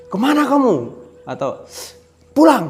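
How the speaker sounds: high, swooping scolding. Retelling what a parent would say on finding their child, acting out a raised, high voice. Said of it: "minimal nada suaranya itu sudah tinggi".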